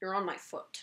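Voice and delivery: soft, calm, utterly unruffled, serene voice. Retelling what Jay said once she stopped the car, imitating Jay's calm, serene voice. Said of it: "in his most calm, serene voice".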